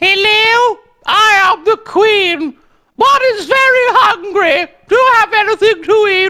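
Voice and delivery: high, loud, slow announcer-style delivery. Acting out the Queen arriving at the door hungry: playing the Queen. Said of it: "If the Queen came right now ... she says".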